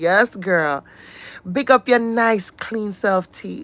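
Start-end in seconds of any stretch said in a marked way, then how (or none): 1.5-3.6 put-on Jamaican accent. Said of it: "It's the Jamaican accent for me".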